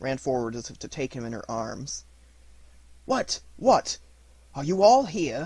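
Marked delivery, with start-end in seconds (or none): 3.0-5.5 irritable, peevish, shrill, very high, very loud outburst. Reading the lawyer Utterson finding the servants all gathered: peevish. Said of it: "said the lawyer. / said the lawyer. / said the lawyer".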